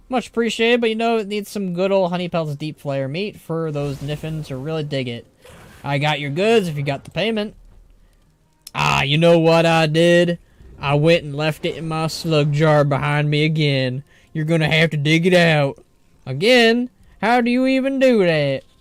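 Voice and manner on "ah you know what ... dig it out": put-on Southern accent. Reading a game character's dialogue aloud: put-on Southern accent. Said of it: "the southern accent".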